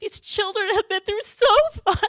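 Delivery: overcome, emotional, very high and very loud. Speaker tells of children grieving a classmate who died, emotional. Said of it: "I'm sorry I'm emotional".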